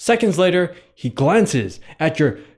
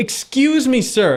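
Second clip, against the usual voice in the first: calmest possible tone, lightly raised; 8 semitones higher than usual. Acting out asking a stranger for help while lost: calmest tone possible. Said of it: "in the most calmest tone you have".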